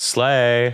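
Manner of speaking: utterly flat, dead, drawn-out deadpan monotone. Retelling a character's line after killing the bad guy: imitating a monotone voice. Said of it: "in the most monotone voice".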